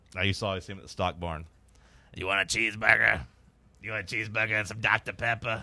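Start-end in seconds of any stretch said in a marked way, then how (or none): 2.1-5.6 real raspy put-on voice, heavy rasp every word. Imitating a man he used to see at the stock barn, raspy voice impression. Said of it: "a real raspy voice like this".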